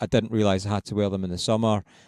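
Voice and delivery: plain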